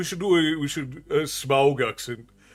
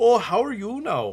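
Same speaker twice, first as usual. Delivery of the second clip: put-on Canadian accent; 7 semitones higher than usual. Answering a chat request with a stereotypical Canadian accent. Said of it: "that's stereotypical Canadian".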